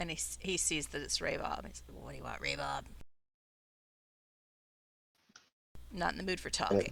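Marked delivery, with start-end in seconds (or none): 2.0-6.9 put-on very low, rough, gruff drunken slurring voice. Narrating a story, the storyteller voices a man greeting a visitor in a gruff, slurring voice. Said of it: "you hear this gruff voice say".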